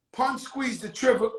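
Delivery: plain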